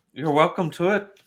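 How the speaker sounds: put-on, loud, very high Scottish brogue. Voicing a character offering stew to the players: scottish brogue. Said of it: "not as good at the Scottish brogue".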